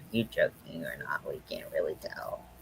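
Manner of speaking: low, hushed, puzzled whisper.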